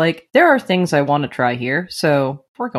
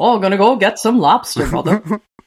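unconvincing put-on Maine accent, higher; 4 semitones higher than usual. Mocking guys who call their wives mother, in an unconvincing Maine accent. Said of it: "I can't do a convincing Maine accent".

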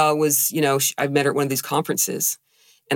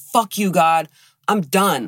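crying, tearful, mild half-yelled outburst; 4 semitones higher than usual. Recalling crying in the car, feeling betrayed by God: reenacting crying, screaming at God. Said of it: "I'm crying and I'm yelling and I'm screaming and I'm saying".

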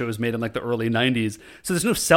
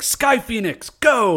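put-on high, acted-out kid's battle cry yell; 9 semitones higher than usual. Retelling a little boy playing O-Ranger: imitating a kid yelling. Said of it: "he's yelling".

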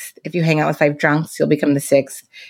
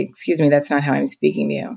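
acted flat deadpan delivery. Retelling the reply given to people who react to speaking up, deadpan retelling. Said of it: "I would have to just deadpan look at them and say".

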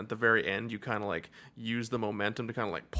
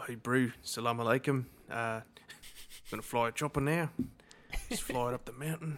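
put-on New Zealand accent, easygoing tone. Imitating the actor who plays a pilot with a Kiwi accent impression. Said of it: "hearing him say salam alaikum in a Kiwi accent".

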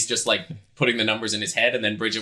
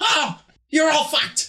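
exasperated, fed-up, furious voice, higher; 3 dB louder than usual. Voicing a character who grabs the money back and stomps off: exasperated, angry character. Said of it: "he's like".

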